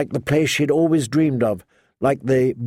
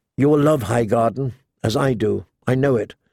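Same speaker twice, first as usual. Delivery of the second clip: ordinary delivery, nothing marked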